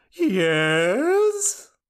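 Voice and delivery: very high, swooping, drawn-out delivery. Giving the requested impression first, doing the cashew guy. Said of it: "the cashew guy at the Duke of Nuts entrance".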